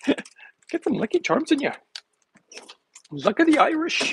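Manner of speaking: tiny, very high-pitched leprechaun voice. Talking about eating Lucky Charms, doing the Lucky Charms leprechaun voice. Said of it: "I can make the little leprechaun voice".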